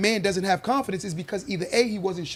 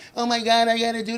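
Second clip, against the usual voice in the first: mocking whiny little girl voice, higher; 3 semitones higher than usual. Mocking grown men who still rely on others: mocking little-girl voice. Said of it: "like a little girl".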